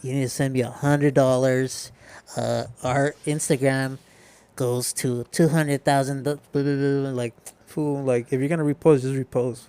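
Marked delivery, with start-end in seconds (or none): 0.0-7.1 put-on childlike cartoon voice. Imitating a repost page asking for money in a DM: Chuckie from Rugrats voice. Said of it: "You sound like Chucky from the Rugrats".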